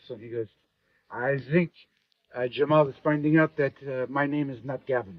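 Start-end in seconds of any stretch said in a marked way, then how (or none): 1.1-5.2 put-on very strong French accent, laid on thick. Retelling a conversation about Jamal, quoting Nicola in his very French accent. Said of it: "in his very French accent".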